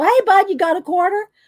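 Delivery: loud, high calling-out voice. Retelling walking up to her husband at his game: imitating her own loud call. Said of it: "Walk up to him loud".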